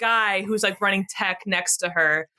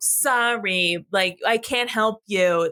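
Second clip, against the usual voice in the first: slow, stuck-up, dismissive voice, "sorry" dragged out. Describing an actress's movie role, mimicking her as a stuck-up pageant lady. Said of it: "she's always like a stuck-up uh, pageant lady".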